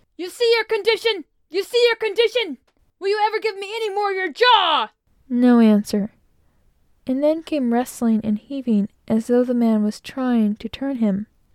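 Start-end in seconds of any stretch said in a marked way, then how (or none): 0.2-4.9 furious bullying roar, very high and loud. Narrator reading a captain shouting down a hatchway at a man, loud, clear enraged shouting. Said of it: "the captain seemed very much out of humor. / eyes flashing with rage, / said the captain, / said the captain, / for his voice was loud and clear. / shouted the captain. / eyes flashing with rage".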